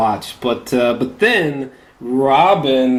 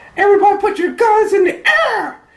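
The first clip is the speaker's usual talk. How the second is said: put-on high-pitched screaming shout, pitched even higher; 3 dB louder than usual. Retelling a movie bank robbery scene: imitating Ryan Gosling's high-pitched scream. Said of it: "Ryan Gosling's scream when he walks into the bank".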